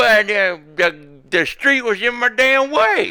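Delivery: put-on very high, loud elderly old man voice. A man accused of jaywalking answers the officer, in an old man voice. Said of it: "the old man voice".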